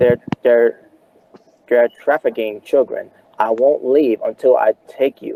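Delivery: ordinary delivery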